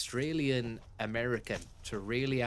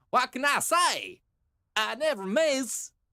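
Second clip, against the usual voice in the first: put-on accent drifting from Australian to Louisiana, very high; 13 semitones higher, 7 dB louder than usual. Repeating a game character's line, mocking the accent drifting Australian to Louisiana. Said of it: "Kinda goes a bit Australian".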